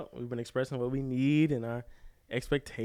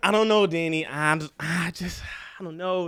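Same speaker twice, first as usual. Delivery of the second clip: unsure, undecided, noncommittal, hedging voice; 4 semitones higher, 4 dB louder than usual. Retelling a FaceTime call from Taylor: imitating Taylor. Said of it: "that's how she be".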